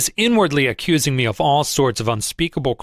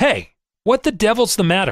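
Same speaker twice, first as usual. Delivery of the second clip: furious, high-pitched, angry yell; 7 semitones higher than usual. Narrator reads an angry man rushing up to the speaker by the ticker, yelling.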